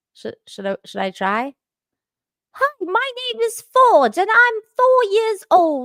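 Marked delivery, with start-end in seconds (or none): 2.6-5.9 very high-pitched, put-on British accent. Reading a child's letter aloud, trying it in a British accent. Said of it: "should I do a British accent?".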